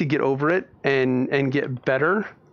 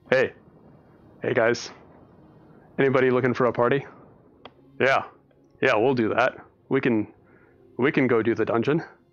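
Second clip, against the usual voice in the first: put-on voice, dropped much deeper; 2 semitones lower than usual. Showing how to always do a voice when talking to a party: put-on much deeper voice. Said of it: "speak with a voice and just always do a voice ... just go down a few octaves".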